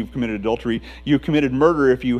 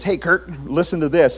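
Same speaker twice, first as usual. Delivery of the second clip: put-on New Zealand accent, higher; 3 semitones higher than usual. Act out a man at Kirk Cameron's table addressing him, in a put-on New Zealand accent. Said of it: "in his New Zealand accent says".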